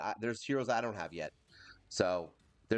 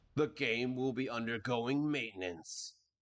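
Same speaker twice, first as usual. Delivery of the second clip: big, grand, dramatic epic announcer voice. Speaker reading a game notice aloud, epic voice. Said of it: "that was my epic voice".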